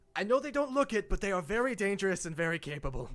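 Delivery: nervous uneasy voice. The cloaked ranger looks up at Bess on her stilts: nervous ranger voice. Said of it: "The cloaked ranger kind of nervously".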